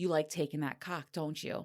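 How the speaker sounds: ordinary delivery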